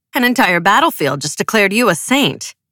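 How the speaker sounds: ordinary delivery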